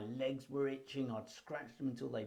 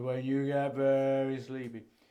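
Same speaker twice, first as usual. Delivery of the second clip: put-on old-fashioned hypnotist voice, very loud and funny; 8 dB louder than usual. Recalling an old-fashioned hypnotherapist's first words, in his hypnotherapist's funny voice. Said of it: "he started talking like this".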